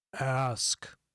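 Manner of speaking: loud, deep, rumbling voice. A game narrator voices an unseen speaker, deep rumbling voice. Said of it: "you hear a deep rumbling voice say".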